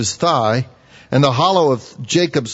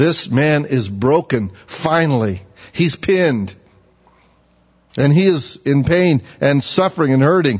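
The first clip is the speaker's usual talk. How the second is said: ordinary delivery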